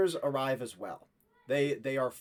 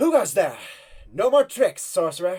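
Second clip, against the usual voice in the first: very loud, fierce shout; 4 semitones higher, 10 dB louder than usual. Voicing a knight with bow drawn challenging strangers: fierce call. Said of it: "would call fiercely out to you".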